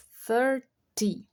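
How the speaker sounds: "thirty" with stress on first syllable "thir". Teaching English number words, stress on thir in thirty. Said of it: "enfatizar o third. A primeira, o third não, a primeira sílaba".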